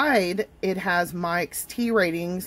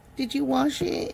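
needling, teasing, annoying, pitched-up mocking voice; 6 semitones higher, 3 dB quieter than usual. Brewing tea for y'all, voicing a nagging viewer in a mocking imitation of Brian. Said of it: "That's the voice I use to annoy Brian".

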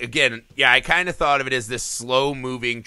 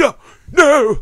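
mock gasping shock, very high, loud, shrill; 14 semitones higher, 8 dB louder than usual. Retelling her own reaction to a shocking scene, retelling gasping like an old man. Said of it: "gasping like some old man".

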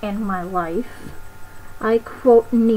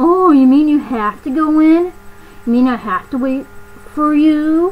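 high, loud, exaggerated complaining tone; 5 semitones higher, 7 dB louder than usual. Retelling her complaint from a visit to Noodles & Company, mimicking her making a fuss. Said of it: "In that tone".

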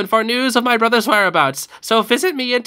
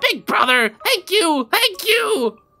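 over-the-top strained put-on voice, higher pitch; 8 semitones higher than usual. Voicing the little brother thanking big brother: over-the-top little brother voice. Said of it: "my voice".

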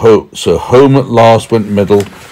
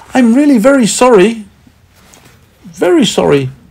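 tiny, small, very high-pitched voice; 14 semitones higher than usual. Reading a story, a character answers someone scolding them over spoiled cheese; small voice. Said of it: "said Middle in a small voice".

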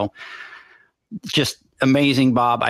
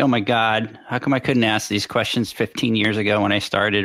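usual speaking voice

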